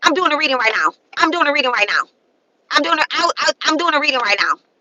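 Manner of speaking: fast, dismissive, brushing-off tone. Mocking how a woman talked to her son, imitating the mother. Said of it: "That's how she talked to her son".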